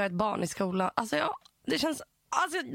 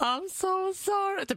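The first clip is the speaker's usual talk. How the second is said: put-on crying, much higher pitch; 9 semitones higher than usual. Acting out how he apologized, imitating someone crying. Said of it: "Typ gråter".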